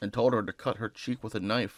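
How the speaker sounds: plain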